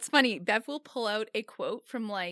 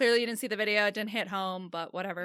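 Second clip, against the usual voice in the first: normal talking voice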